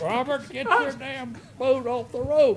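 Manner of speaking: mock hollering, loud and high-pitched. Retelling yelling at someone running a speedboat without lights: retelling a yell. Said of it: "And I yelled at him".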